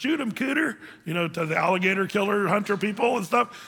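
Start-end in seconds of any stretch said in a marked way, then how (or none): 0.0-0.8 put-on Southern Louisiana accent, higher. Illustrating a guy from a little southern Louisiana swamp town: put-on southern Louisiana accent. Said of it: "the guy's talking like".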